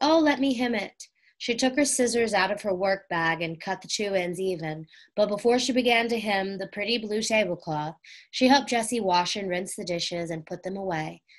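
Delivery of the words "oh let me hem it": high, eager, pleading begging. A girl responds as the new tablecloth turns out unhemmed, begging. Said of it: "Violet begged".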